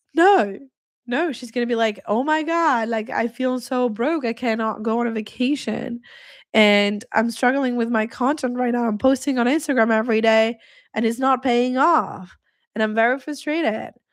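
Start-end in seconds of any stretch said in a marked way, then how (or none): 2.1-13.9 weepy, tearful voice, crying through the words. Acting out a woman crying in bed, voice messaging her bestie: imitating a crying woman. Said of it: "you crying at night in your bed".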